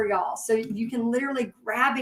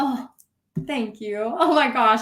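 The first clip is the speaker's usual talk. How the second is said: emotional, choked-up voice on the edge of crying; 4 dB louder than usual. Thanking a viewer for a kind comment just read aloud, close to tears. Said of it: "I'm gonna make me cry".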